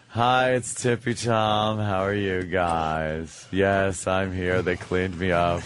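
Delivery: slow, flamboyant, flamingly camp voice.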